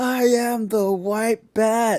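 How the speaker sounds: shrill, slow, very loud, drawn-out high scream. Acting out a gym moment at the final rep: imitating a scream. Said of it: "you start screaming".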